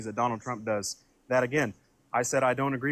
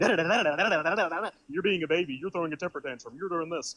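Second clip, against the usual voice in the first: mock derisive, dismissive, high da-da-da babble; 5 semitones higher than usual. Mimicking a debate opponent's repeated insults: mocking imitation of opponent. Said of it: "And you're going".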